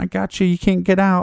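very high-pitched, manic, crazed taunting voice. Speaker retells a man in a clown getup taunting someone tied up, acting like a crazy person. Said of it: "Just acting like a kind of a crazy person".

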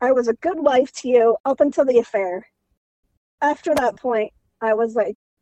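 getting emotional, feeling it. Recounting what she told her husband after his affair, the speaker gets emotional. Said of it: "I'm getting emotional".

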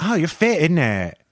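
put-on high-pitched, female Essex accent. Talking about the show, a speaker imitates how its women talk, in a Only Way Is Essex accent impression. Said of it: "I love how the women talk and they're just like".

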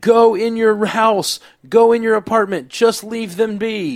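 frantic, urgent yelling, very high and loud. Retelling yelling at the TV while watching an episode: retelling own yelling at the TV. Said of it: "I was yelling at the T V".

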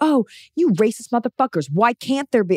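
mock worked-up, outraged screaming rant. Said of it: "their whole identity is like screaming".

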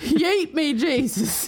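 put-on Southern drawl. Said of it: "making fun of people from the South".

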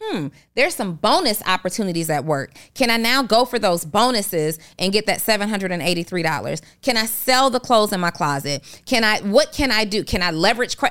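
ordinary talk, nothing marked

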